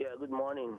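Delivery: faint, barely audible voice. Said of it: "speak up".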